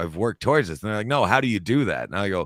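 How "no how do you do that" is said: ordinary delivery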